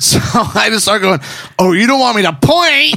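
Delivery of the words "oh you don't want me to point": mad, angry, pitched-up jeering, acted out. Retelling how he taunted her while pointing, imitating himself mad. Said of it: "I'm mad. I've totally lost it".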